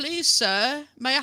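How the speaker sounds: put-on high stock English accent. Complaining about a character's accent, the speaker demonstrates a stereotypical Oliver Twist voice. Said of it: "trying to do like a stereotypical Oliver Twist".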